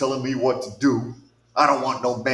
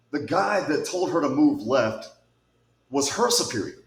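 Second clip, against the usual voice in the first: open contempt, disdainful and scornful delivery. Telling an audience who gave an order, disdainful tone. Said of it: "I say that with disdain in my voice".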